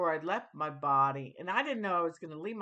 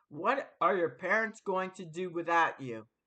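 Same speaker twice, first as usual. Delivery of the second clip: booming male voice. Retelling an experience, repeating what a huge voice asked the speaker about their parents, imitating a booming male voice. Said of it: "a huge booming male voice say".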